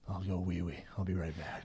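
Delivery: low, totally deadpan, dead-serious delivery. Retelling what the toughest security guy said at a concert: imitating a dead-serious tone. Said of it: "Dead serious goes".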